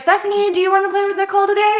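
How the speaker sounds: play-acted, very high-pitched calling holler. Retelling a video where a husband calls upstairs: imitating a husband yelling. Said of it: "And he yells up".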